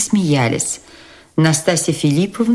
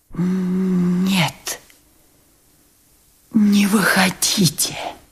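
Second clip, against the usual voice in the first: strained whisper with effort, much slower; 4 semitones higher than usual. Reading the prince's answer after a long silence: whispered with effort. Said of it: "прошептал он наконец".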